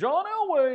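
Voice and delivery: very high-pitched, dopey fan voice. Answering Wade's question about how Broncos fans sound, do a dumb Broncos fan impersonation. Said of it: "dumb Broncos fan impersonation".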